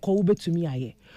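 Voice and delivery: ordinary delivery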